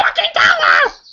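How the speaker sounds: screaming, very high pitched. Speaker recalls yelling at the tv during the show, retelling own scream at tv. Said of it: "I was screaming at the TV like".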